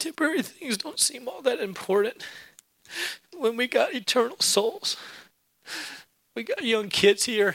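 crying while speaking. Preaching about eternal things and the soul, crying while speaking. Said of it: "I know I'm crying a lot".

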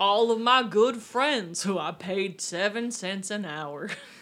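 slow, unhurried drawl with words dragged out. Joking about the shrimp boat workers: Forrest Gump impression. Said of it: "That's my Forrest Gump impression".

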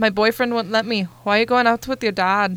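poor put-on Scottish accent. Reading out typed chat messages, in a bad Scottish accent. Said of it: "Forgive my poor accent".

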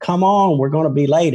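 light, mild, high-pitched calling voice. Retelling how a man yelled at a woman to hurry up, retelling a yell. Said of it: "he's yelling at Winnie".

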